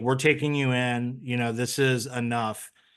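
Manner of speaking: normal talking voice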